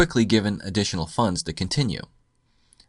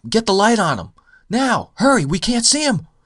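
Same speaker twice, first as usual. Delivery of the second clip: high, loud yelling. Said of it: "a guy yelling in the booth".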